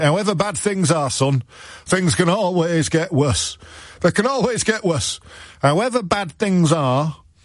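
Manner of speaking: thick folksy Yorkshire voice. Speaker repeats a saying and hears it turn northern; northern Yorkshire-style accent. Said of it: "sounds like a Yorkshire aphorism".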